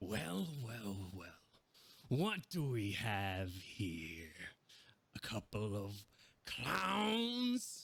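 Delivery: very slow, sly, swooping sinister menace. Narrating a scene, the speaker voices the circus ringleader addressing the two players, sinister. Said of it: "half grinning in this sinister way".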